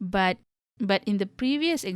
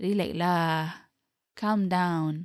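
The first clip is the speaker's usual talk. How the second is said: lower tone, slow and drawn-out delivery; 2 semitones lower than usual. Demonstrating another way to say the phrase, in a lower tone. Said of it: "say it in a lower tone like".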